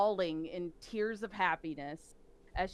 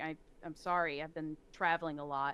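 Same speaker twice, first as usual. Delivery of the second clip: affectless, deadpan, flat, emotionless monotone; 3 semitones lower than usual. Retelling a scene where she replies to Rose, as Alara in a put-on emotionless tone. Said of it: "kind of emotionless tone".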